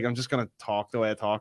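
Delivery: ordinary delivery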